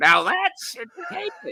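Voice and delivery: very high voice, wildly swooping all over. Joking with a co-host about a grim topic: Crypt Keeper voice. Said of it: "in my best Crypt Keeper voice again".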